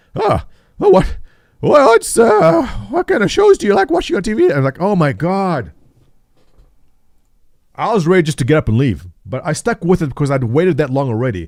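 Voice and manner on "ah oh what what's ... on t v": very high, loud cartoon teenager voice. Retelling a teenager asking interview questions before a game: Simpsons teenager voice. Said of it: "the teenager voice from uh, Simpson".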